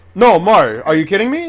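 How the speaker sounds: angry disbelief. Arguing with a speaker who says they defended something: angry. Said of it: "Chill out".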